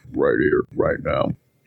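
deep voice. Performing on request for the others: deep voice. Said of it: "so let's hear that deep voice".

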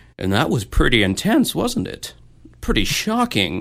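restrained, reined-in, barely contained delighted glee. Retelling how the interviewer reacts to a tragic death: imitating Keith Morrison's held-back delight. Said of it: "Keith Morrison will be like".

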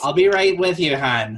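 loud Massachusetts service-desk woman voice. Imitating a Massachusetts woman who calls a customer hon. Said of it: "a Massachusetts woman calling you hon".

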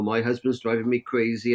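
ordinary talk

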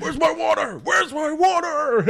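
high-pitched yell. Recapping a movie scene where Cage keeps demanding water, Nicolas Cage yelling. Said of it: "Cage just keeps yelling".

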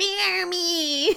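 very high, cute, tiny little demon voice. Recapping an episode, quoting the tiny summoned demon in a tiny little demon voice. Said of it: "He's so cute with his little voice".

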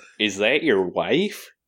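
put-on Chicago accent. Joking about a movie's cast, asking a question in a put-on Chicago accent. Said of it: "Are you trying to do your Chicago accent?".

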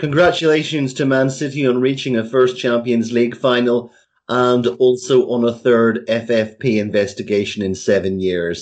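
normal talking voice

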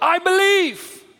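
high, desperate, shouted out.

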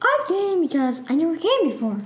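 high put-on character voice. Guest on a pretend show, answering why she came: Miss Piggy voice. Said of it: "I need to get my voice".

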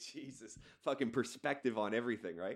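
ordinary talk

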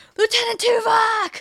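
play-acted shrill shouted call, very high. Retelling a scene where a character calls for help: imitating Vorik yelling. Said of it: "he yells".

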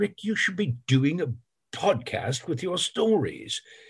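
put-on British accent. Recalling a friend urging him to start a podcast, the speaker is imitating Luke Hannington. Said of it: "that accent I just did".

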